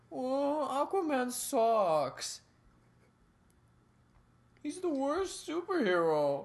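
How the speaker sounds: put-on very high, very slow, sobbing Indian accent. Describing a TV episode, imitating a character in a mock-crying Indian accent. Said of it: "crying Indian accent".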